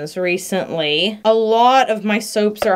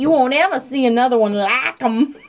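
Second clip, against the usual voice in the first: put-on boyish, movie-kid character voice; 4 semitones higher than usual. Saying the speaker sounds like the kid on Old Yeller, imitating the kid on Old Yeller. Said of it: "I sound like the kid on Old Yeller who's like".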